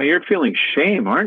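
acted whispering. Retelling leaning over to a woman in an audience: retelling a whisper. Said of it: "I lean over and I whisper".

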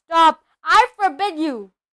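yelling in panic. Reading a story aloud, voicing the uncle as he interrupts: yelling in panic. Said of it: "yelled Uncle Vernon in panic".

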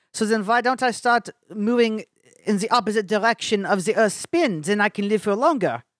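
put-on German accent. Act out Einstein asking a question in a conversation, in a put-on German accent. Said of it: "That was my German accent".

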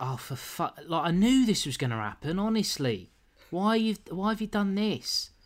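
livid, seething voice. Recapping how a man reacted when they got back, retelling a fuming rant. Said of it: "he's fuming".

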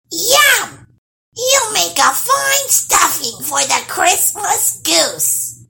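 very high, shrill, loud hag's screech. The hag screeches at Nils, the gnome found in the trunk, screeching. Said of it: "screeched the hag".

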